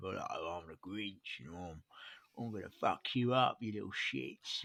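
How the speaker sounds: put-on tough voice with London accent. Joking about a Grinch voice to avoid: Ray Winstone Grinch voice. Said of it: "turn my Grinch into a Ray Winstone kind of".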